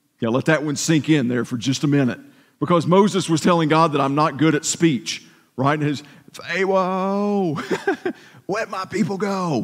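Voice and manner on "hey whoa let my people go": slow, drawn-out cartoon character voice. Discussing Moses's trouble with speech, the speaker quotes Moses in an Elmer Fudd voice. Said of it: "or like Elmer Fudd".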